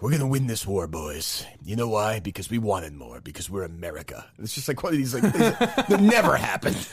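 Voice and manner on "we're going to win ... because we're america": rousing, stirring delivery with full conviction. You act out a scene from the war movie Pearl Harbor, as Alec Baldwin giving a speech. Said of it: "giving a speech and he's like".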